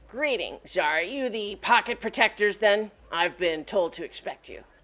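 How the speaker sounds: goblin character voice. Voicing a goblin who calls out to the players: Sticky Zicky goblin voice. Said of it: "a goblin in an immaculate".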